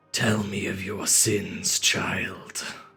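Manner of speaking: rough, scratchy, beastlike creature rasp. A game master voices a creature that finally speaks to a player: scratchy, bestial creature voice. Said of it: "is scratchy and bestial".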